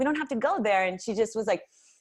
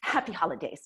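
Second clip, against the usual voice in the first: sarcastic, insincere, passive-aggressive delivery; 3 semitones lower than usual. Retelling what the woman in line said: imitating a sarcastic tone. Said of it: "she's being completely car-, sarcastic about it".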